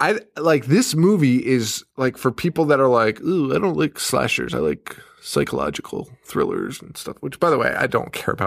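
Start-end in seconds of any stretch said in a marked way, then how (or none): 3.2-7.2 mock-highbrow, snooty, snotty put-on voice. Mocking people who dislike slashers: mocking snooty voice. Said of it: "I don't know why I'm making that voice".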